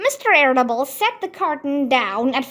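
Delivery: ordinary delivery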